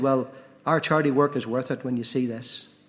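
ordinary talk

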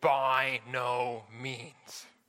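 very deep, emphatic voice sounding certain. Retelling how someone else in the house answered Paul's words, very deep Paul-like voice. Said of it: "in a very deep, Paul-like voice".

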